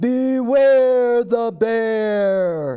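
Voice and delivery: growly booming bear voice, "bear" drawn out. Narrating a story as a bear announces itself, in a great growly booming voice. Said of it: "a great growly voice boomed out".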